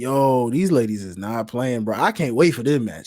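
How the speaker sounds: plain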